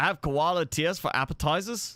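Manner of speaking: attempt at a put-on Australian accent. Chatting while explaining a game layout, trying out an Aussie accent. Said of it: "I don't know if that counts as an Aussie accent".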